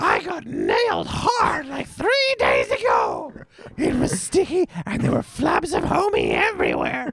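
very high-pitched cartoon character voice. Showing off your impression on a podcast, do a Marge voice.

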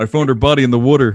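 loud, odd, put-on Philadelphia accent. Quoting a woman who found a body, in her weird Philadelphia accent. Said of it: "with that weird Philadelphia accent".

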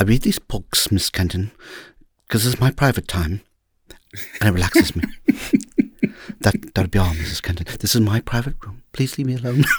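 soft, quiet, gentle delivery. Acting out a Remains of the Day scene addressing Miss Kenton, gentle Remains of the Day voice. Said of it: "I love how you're doing the gentle voice".

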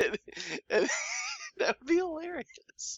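very high-pitched, talking through laughter. Picturing a funny comedy skit idea, laughing while talking. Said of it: "I'm laughing at my".

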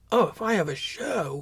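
ordinary delivery

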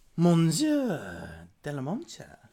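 put-on attempt at a French accent. Playing a shop scene with a return customer, in an attempted French accent. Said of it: "he has my attempt at the French accent".

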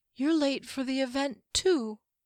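drawn-out, weary, exhausted voice, a touch high. Reading a story, a woman tells an elf and a mage they're late, slow and exhausted. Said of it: "She spoke slowly, as though exhausted".

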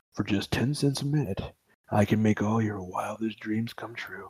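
low, deep, hushed, seductive sultry voice. Riffing on a housewife story, doing a deep porn voice guy. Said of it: "We're going to go like deep porn voice guy".

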